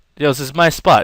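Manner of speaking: plain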